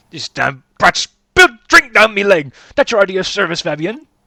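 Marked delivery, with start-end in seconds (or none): 0.1-2.5 furious, angry yelling. Voicing a customer whose drink was spilled by a child: angry shouting customer. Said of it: "why are you raising your voice at a child?".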